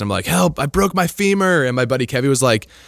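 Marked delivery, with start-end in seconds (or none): 0.3-1.6 put-on high, drawn-out yell, calling out. Retelling how he called up to his skiing buddy from against a tree, retelling a yell for help. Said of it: "I'm yelling back up to my buddy Kevy".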